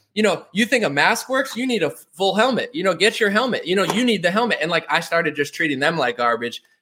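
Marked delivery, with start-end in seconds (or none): 0.5-4.6 mock berating, hectoring rant, high-pitched and trolling. Retelling trolling staff at Cheesecake Factory, retelling himself yelling. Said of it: "I'd start yelling at them and be like".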